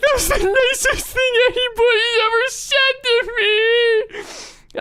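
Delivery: acted, very high, drawn-out, weepy sobbing voice. Retelling a reply to a compliment: imitating someone bawling. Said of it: "she started fucking bawling".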